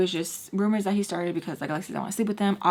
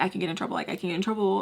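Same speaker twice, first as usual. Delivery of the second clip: normal talking voice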